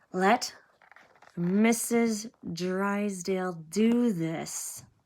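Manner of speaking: very slow hiss through clenched teeth. Reading the line of a woman whose head lies in the narrator's lap, hissed through clenched teeth. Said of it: "she hissed through clenched teeth".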